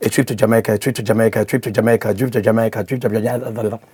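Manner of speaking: as fast as possible, rapid-fire delivery. Speaker demonstrating a phrase to be repeated five times, saying it very fast. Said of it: "You're going to say it five times as fast as you can".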